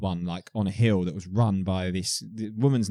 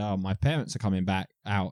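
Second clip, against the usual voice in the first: ordinary delivery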